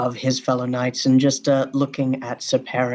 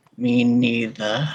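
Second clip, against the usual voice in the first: strained words forced out through gritted teeth, grimacing. A knight, asked if he is nervous before battle, answers through gritted teeth. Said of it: "from like gritted teeth, like forcing out of a grimace".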